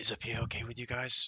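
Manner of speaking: hushed whisper. Speaking in character, quietly asking companions a question: whispering. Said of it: "I'll whisper to them".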